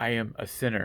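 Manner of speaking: normal talking voice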